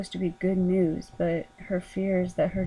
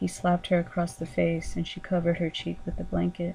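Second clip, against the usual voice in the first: plain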